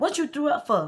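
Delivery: mad, accusing tone. Retelling how a date reacted when the speaker threw up: imitating someone getting mad. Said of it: "He got mad".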